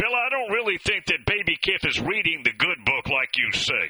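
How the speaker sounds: plain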